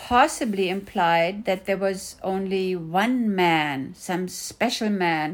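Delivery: ordinary delivery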